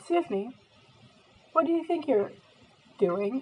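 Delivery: put-on English accent. Retelling what a security guard said on finding them upstairs: imitating a security guard in english accent. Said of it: "pretend I'm talking in English accent".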